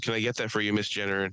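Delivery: plain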